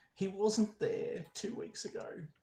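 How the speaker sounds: hushed, whispered words breaking through sobs. A woman answers a question about the painting, sobbing, broken voice. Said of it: "she is sobbing uncontrollably".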